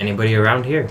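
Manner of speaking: speaking in a hush. Playing own character in a scene, asking around in a hushed voice. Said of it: "say in a hushed voice".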